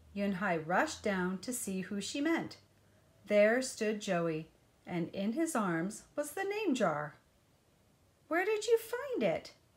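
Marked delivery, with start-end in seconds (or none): 8.2-9.5 out-of-breath, very high-pitched voice. Narrator voicing Yunhai, just rushed downstairs, asking Joey, breathless. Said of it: "asked Yunhai breathlessly".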